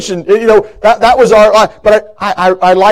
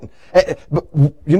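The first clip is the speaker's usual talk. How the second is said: stumbling, stuttering over words, lower and quieter; 5 semitones lower, 7 dB quieter than usual. Telling about little notes she used to write, stuttering. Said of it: "I'm stuttering a lot now".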